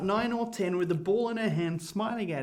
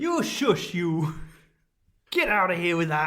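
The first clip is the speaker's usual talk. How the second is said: young, teenage, put-on Yorkshire accent; 3 semitones lower than usual. Brushing off a suggestion about the kids, in a teenage Yorkshire accent. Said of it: "There we're in teenage Yorkshire now".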